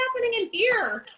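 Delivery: very high, surprised exclamation. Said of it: "and I was like".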